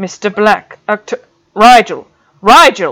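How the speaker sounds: loud, drawn-out call. Narrator voices a man calling to someone who doesn't register him; speaking louder. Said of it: "He spoke louder".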